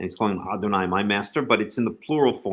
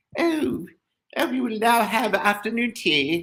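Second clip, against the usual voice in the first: very high, slow, bad fake English accent; 13 semitones higher than usual. Explaining the majestic plural, the speaker repeats the Queen's line in a horrible English accent. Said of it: "That's a horrible English accent".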